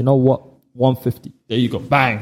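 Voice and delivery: ordinary talk, nothing marked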